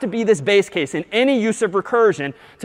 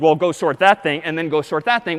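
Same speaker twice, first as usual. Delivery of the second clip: plain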